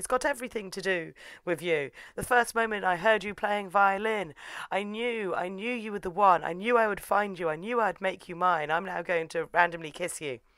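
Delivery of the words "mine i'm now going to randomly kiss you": ordinary talk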